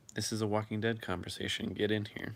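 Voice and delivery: ordinary talk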